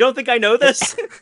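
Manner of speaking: furious shout, very loud and pitched way up. Retelling Achilles answering his talking horse: acting out angry Achilles. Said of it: "Achilles, he's, like, angry".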